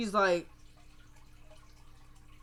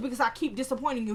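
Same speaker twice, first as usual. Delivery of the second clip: usual speaking voice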